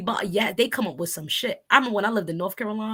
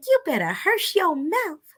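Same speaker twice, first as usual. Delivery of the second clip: put-on honey-sweet, lilting Southern accent; 8 semitones higher than usual. Recalling an older cousin in her eighties telling the kids to hush, doing cousin Sue's sweet Southern accent. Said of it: "everything she says sounds so sweet with that Southern accent".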